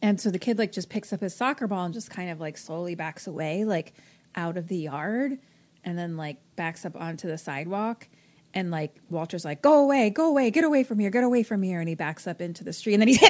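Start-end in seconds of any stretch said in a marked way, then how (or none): 9.6-11.8 put-on scary shouting, high, loud, repeated. Retelling a plot where a man yells at a kid: retelling a yell. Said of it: "he's, like, yelling at him".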